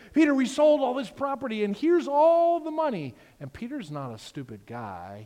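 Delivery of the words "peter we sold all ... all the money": very high, very loud, bursting with excitement. Retelling a Bible story, voicing Ananias handing Peter money: super excited Ananias voice. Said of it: "he's super excited".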